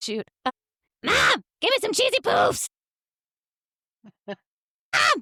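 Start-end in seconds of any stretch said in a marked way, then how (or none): 1.0-5.2 very high, loud cartoon voice, swooping and drawn out. Asked by others to try it, Cartman voice. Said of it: "hear your Cartman voice".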